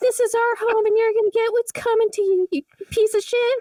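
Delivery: put-on very high, menacing, creepy little ghost girl voice. Voicing a starved little girl ghost making a threat: threatening little girl ghost voice. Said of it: "a little girl ghost who starved to death, uh, down below, who is like".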